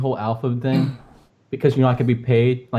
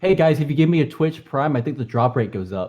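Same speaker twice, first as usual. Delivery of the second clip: sarcastic, tongue-in-cheek, shameless fake streamer voice. Pretending to ask viewers for twitch prime: pretend sarcastic plug. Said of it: "it would sound really sarcastic".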